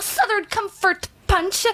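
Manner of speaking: slow delivery with an English accent.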